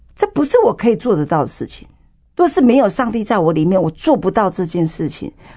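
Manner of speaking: normal talking voice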